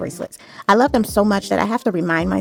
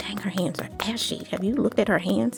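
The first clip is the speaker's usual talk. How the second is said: mock whisper, quieter; 7 dB quieter than usual. Imagining someone in the back of her audience remarking, retelling a whisper. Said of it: "somebody in the back whispered".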